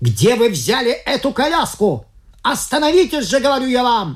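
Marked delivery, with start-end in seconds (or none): 2.4-4.2 yelled out loud. Narrator reads a cyclist shouting at the people in a carriage: yelling. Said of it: "завопил он".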